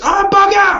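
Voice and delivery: shrill, very high, loud shriek. Speaker telling a story about a woman who bolts for the jeep, retelling a shriek. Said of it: "she shrieks".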